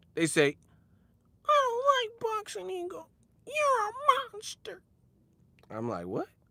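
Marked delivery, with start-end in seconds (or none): 1.5-4.8 very high-pitched, squeaky cartoon voice. Speaker retells how people react when he keeps it real: Gingerbread Man from Shrek voice. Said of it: "they turn to the gingerbread man from Shrek".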